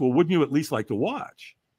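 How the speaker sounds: ordinary talk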